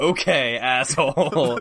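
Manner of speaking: loud, slow, sarcastic jabbing tone.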